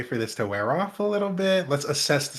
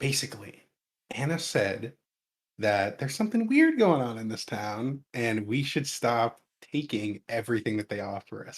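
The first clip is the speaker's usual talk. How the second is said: low, lowered, secretive voice; 4 semitones lower, 4 dB quieter than usual. In character, stopping mid-sentence and looking around, speaker talks in a lowered voice. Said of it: "I'm gonna lower my voice".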